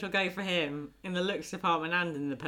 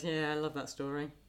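put-on flat, deadpan delivery; 4 dB quieter than usual. Retelling how someone answered when told a story, mimicking a deadpan reply. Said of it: "That kind of really deadpan".

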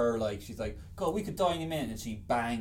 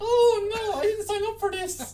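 mock high, loud, tearful sobbing wail; 8 dB louder than usual. Describing a scene where the actress runs away: imitating Christina Ricci crying. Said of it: "She's all crying like".

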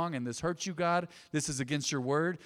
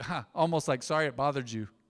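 put-on laugh while speaking. Recalling how a too-proud man apologized, imitating apologizing with a laugh. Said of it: "his apologies were always like with a laugh".

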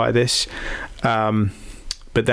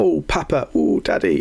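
put-on infantile, childish, toddler-style baby talk; 4 semitones higher than usual. Speaker mocks a man in his fifties who talks like a toddler: toddler voice. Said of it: "You speak like a toddler".

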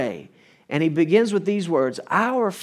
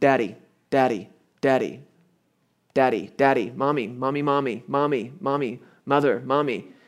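imitated child voice calling out, slower; 4 semitones lower than usual. Comparing repetitive prayer to a child, speaker imitates a child calling out. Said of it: "like a child standing there going".

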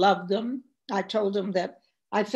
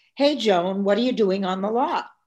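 acted loud shouting; 3 dB louder than usual. Retelling how a studio boss yelled over from a wall: imitating someone yelling over. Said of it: "he yelled over".

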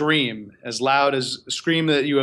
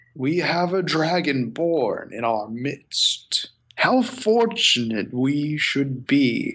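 voice of a huge, large, ancient dragon. Voicing a large green dragon as it addresses a dragonborn in the party: green dragon voice. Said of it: "And you see a large green dragon appear".

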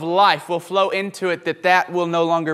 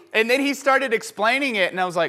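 ordinary talk

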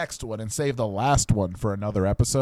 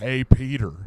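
British man doing a put-on American accent; 3 dB louder than usual. Retelling an imagined movie scene as Doctor Strange: Doctor Strange voice. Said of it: "I'm a British man doing an American accent".

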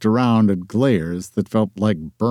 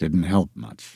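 low, soft mutter under the breath; 5 semitones lower, 5 dB quieter than usual. A man answers a woman who remembers his loss, muttering. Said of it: "he muttered".

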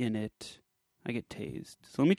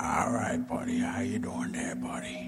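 soft put-on ASMR-style voice, lower and quieter; 4 semitones lower, 4 dB quieter than usual. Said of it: "that's the Sandler A S M R".

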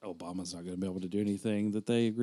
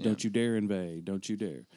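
ordinary delivery

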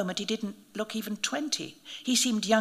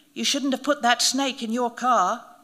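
deadpan, dry, flat, quick delivery; 2 semitones higher, 4 dB louder than usual. The narrator replies to a priest after questioning him; said dryly. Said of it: "I said dryly".

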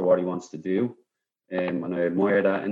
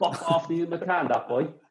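put-on very high-pitched, heavy Cork accent laid on thick; 10 semitones higher than usual. Retelling what a man said about Terry, the speaker uses the thickest Cork accent. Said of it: "the thickest Cork accent ever".

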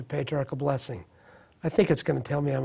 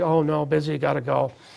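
imitated hurried, rushed, dismissive tone. Retelling own reply when offered a burger: imitating own hurried brush-off. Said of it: "immediately, quickly".

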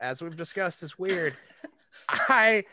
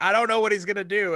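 ordinary talk

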